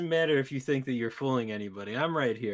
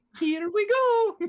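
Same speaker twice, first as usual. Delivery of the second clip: very high, loud, raised cheer; 7 dB louder than usual. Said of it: "He said it in the Mario voice".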